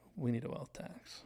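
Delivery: hushed murmur under the breath. Retelling a scene from a show, a character whispering to herself: imitating Ava whispering. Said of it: "when she whispered to herself".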